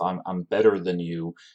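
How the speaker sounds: normal talking voice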